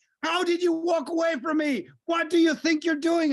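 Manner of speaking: scared, high, screaming voice. Recalling a lost kid found in a park, the speaker imitates the mom screaming at the kid. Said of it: "the mom was screaming at the kid like".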